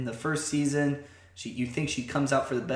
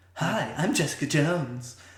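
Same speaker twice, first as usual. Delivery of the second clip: put-on whiny voice. Trying the impression again after the other speaker's tip: Jessica Jones impression. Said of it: "I can't do a good Jessica Jones".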